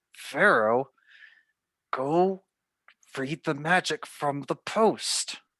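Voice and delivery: quick remark out of the corner of the mouth. She glances back over her shoulder at Pharaoh, speaking out of the corner of her mouth. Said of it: "out of the corner of her mouth say".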